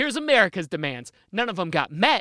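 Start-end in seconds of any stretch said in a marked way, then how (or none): none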